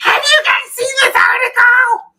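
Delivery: very high, drawn-out screech. Retelling what mom would ask about a newspaper article: Edith Bunker screech. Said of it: "Edith Bunker screech".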